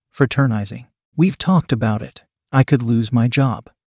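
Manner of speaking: plain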